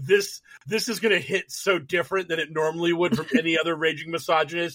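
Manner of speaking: normal talking voice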